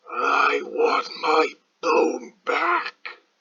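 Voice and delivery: furious, forceful, very angry, loud and rising. Narrator reads a voice that shakes the whole house: very angry, loud. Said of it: "Now it sounded very angry, and it was so loud".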